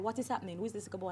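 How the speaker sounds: hushed aside.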